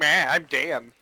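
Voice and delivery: sour, grouchy, grumpy, unimpressed voice. Mocking a player who is reluctant to join: imitating grumpy Dan. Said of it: "Grumpy ass Dan".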